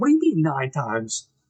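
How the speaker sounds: play-acted irritated, put-out, pissed-off demanding tone. Retelling someone's reaction to the others' plan, mock-annoyed. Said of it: "Rick's getting a little bit like pissed".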